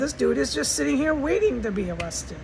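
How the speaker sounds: plain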